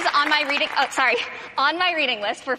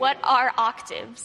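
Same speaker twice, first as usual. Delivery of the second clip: slow, unhurried delivery. A quiz contestant, told she speaks too quickly, answers the last clue; spoken slowly. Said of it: "Thank you for phrasing it slowly".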